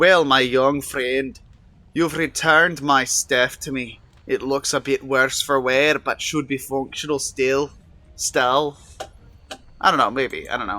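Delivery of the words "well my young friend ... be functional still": put-on slow, clumsy Irish accent, done poorly. Redoing a character's line a second time, in a bad irish accent. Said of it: "doing that accent poorly".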